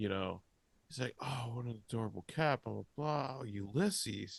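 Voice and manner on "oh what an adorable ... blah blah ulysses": thrilled, eager, excited, gushing chatter. Retelling a vet assistant greeting the cat: imitating an excited vet assistant. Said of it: "he's really excited".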